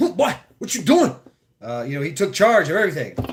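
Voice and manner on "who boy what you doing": put-on old man voice, pitched very high. Retelling how an old city maintenance worker talked: imitating an old man's way of talking. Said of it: "talk like this".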